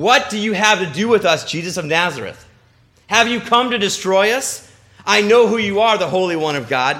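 loud, yelling outcry. Speaker showing listeners how someone in a service might yell out: yelling. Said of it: "when I just yelled".

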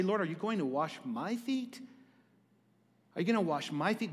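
sarcastic, sneering voice. Acting out a disciple's reply while retelling scripture: sarcastic Peter voice. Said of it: "in a sarcastic way".

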